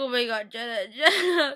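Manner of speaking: mock crying out through sobs, slow. Acting out how she reacted while watching: imitating her own crying. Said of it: "'Cause I cried so bad when Jenna died".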